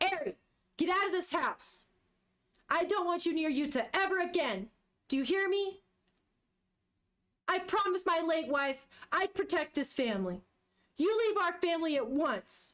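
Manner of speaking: acted high-pitched screaming. Reading a comic aloud, voicing a father telling a girl to leave: retelling a scream. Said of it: "screaming at this point".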